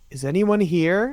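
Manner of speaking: calm non-threatening tone. A player's character pokes her head through a door and calls out in a normal, non-threatening tone. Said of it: "like a normal tone, but like a non-threatening one".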